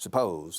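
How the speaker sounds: suppose with stress on second syllable, -pose. Teaching English word stress in Spanish: stress on second syllable of suppose. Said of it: "La segunda sílaba lleva la, el estrés".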